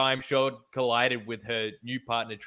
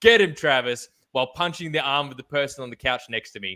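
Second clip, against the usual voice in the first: usual speaking voice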